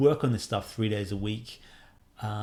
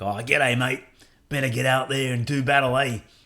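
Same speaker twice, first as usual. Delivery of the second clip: loud, goofy, silly put-on Australian accent; 3 semitones higher, 5 dB louder than usual. Showing the game's joke Aussie language option: silly Australian accent. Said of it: "with a silly accent".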